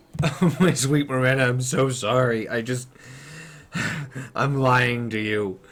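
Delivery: weeping, sobbing, crying voice. Voicing a father who confesses lying to his daughter, sobbing in character. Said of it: "he starts sobbing".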